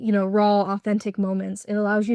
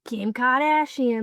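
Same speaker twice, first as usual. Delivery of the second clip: intense put-on Boston accent; 3 semitones higher than usual. Quoting a famous clip of her, as a Mikayla Nogueira impression. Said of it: "it's like a Boston accent".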